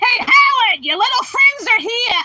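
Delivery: shrill, loud hollering call. Showing off impressions, the speaker does a Mrs. Wolowitz voice. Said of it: "I also do Missus Wolowitz from Big Bang Theory".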